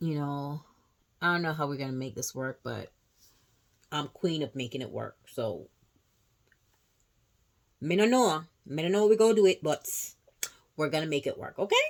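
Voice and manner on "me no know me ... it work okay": loud put-on Jamaican accent with a slight twist. Talking viewers through a makeup palette, slipping into a put-on Jamaican accent. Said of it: "a little twist in the Jamaican accent".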